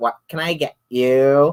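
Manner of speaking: put-on high, drawn-out Valley Girl voice. Speaker retells a tv skit with a woman at a coffee shop, in a valley girl voice. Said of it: "And she's got this voice".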